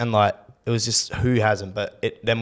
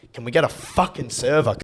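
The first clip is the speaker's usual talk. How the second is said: put-on angry voice; 2 semitones higher than usual. Retelling a drunken dinner, demanding a server: imitating own angry demand. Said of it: "getting angry at the situation".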